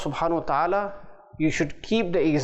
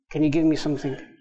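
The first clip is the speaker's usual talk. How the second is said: put-on gentle, polite, humble tone, faster. Acting out someone begging another person for something, very gently. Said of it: "very gently".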